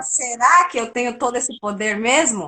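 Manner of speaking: normal talking voice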